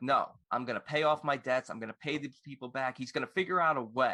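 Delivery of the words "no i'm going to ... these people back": ordinary talk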